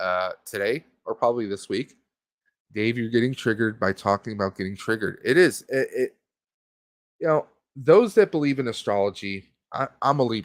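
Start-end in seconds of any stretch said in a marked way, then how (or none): none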